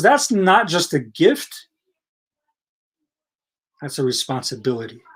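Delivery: dramatic pause, then low, drawn-out voice. Quoting a teaching in conversation, dramatic pause, then lowered voice. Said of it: "You like that dramatic pause and lowering the voice?".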